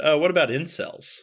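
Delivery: put-on jokey tone. Retelling a woman's joking suggestion for a horror movie idea, imitating her joking. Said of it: "she jokingly said".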